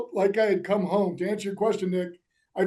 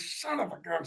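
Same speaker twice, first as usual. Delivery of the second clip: put-on soft, frustrated cursing muttered under breath; 11 dB quieter than usual. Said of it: "So I'm cursing my ass".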